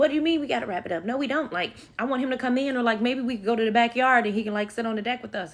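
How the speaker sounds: indignant, angry, pissed-off, unbudging tone. Retelling what she said when told they had to wrap it up, imitating her being angry. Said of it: "So now she's pissed at me".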